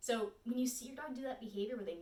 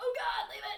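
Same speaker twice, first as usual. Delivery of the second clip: very high, squeezed, strained tense cry; 12 semitones higher, 6 dB louder than usual. Showing how your voice naturally comes out when teaching it: tense voice. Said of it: "a lot of tension in your voice".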